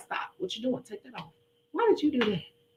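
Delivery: mock hard drilling coach voice, soft and stern. Retelling how he coached a woman, acting out drilling her. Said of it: "coaching her and drilling her".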